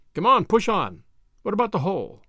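ordinary talk

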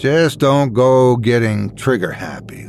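ordinary delivery, nothing marked

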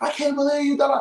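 high-pitched screaming while sobbing. Retelling how a woman chased him out of the club, acting out her screaming, crying. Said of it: "she's just screaming, crying".

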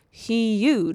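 emphasizing 'huge'. Reading a letter from someone about their mom, with stress on 'huge'. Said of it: "The way you said that".

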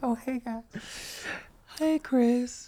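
put-on very high little old granny voice. Podcast hosts joke about doing an episode with a voice filter: soft-spoken granny voice. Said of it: "We do the granny voice".

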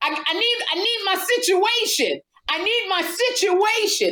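put-on high, wide, tipsy voice.

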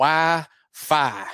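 put-on slow, stretched Southern drawl. Naming one thing the stadium needs, said in a southern drawl. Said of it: "with a southern drawl".

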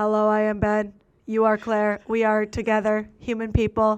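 absolutely dull, lifeless, flat, bored monotone. Recapping a show's guys, mimicking 29-year-old Ben in a flat, bored monotone. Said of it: "Boring, absolute boring monotone. He's like".

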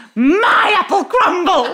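very high, loud, bird-like squawk. Retelling flinging apple crumble into a costume chest, retelling a squawk. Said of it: "I literally squawked".

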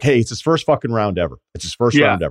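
usual speaking voice

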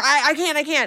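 high, panicked, frantic stammer. Retelling a film scene where a trapped man panics on the phone: imitating someone screaming in panic. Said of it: "screaming and freaking out".

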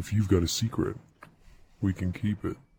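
fake, low, seductive sexy voice. Inviting callers to share late night secrets: put-on sexy voice. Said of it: "that was [name]'s sexy voice right there".

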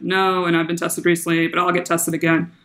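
ordinary talk

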